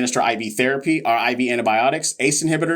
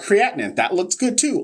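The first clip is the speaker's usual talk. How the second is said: pitched-up, sarcastic tone meaning the opposite; 7 semitones higher than usual. Reviewing a patient's lab values, sarcastic. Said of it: "Also sarcasm".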